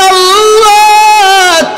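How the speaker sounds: high, drawn-out weeping cry like a sob.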